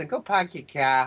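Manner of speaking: put-on Boston accent. Speaker tries out accents, saying they only know a Boston one: Boston accent. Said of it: "I know a Boston".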